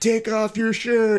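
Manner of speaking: very high, shrill jeering shout. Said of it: "yelling at this dude".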